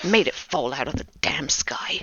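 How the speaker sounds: grumbling under his breath. Voicing an upset ship captain inspecting the branches: grumbling under his breath. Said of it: "he's just kind of grumbling under his breath".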